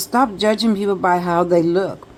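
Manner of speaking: usual speaking voice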